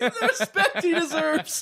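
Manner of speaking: mock-solemn, mocking, very high, slow laughing.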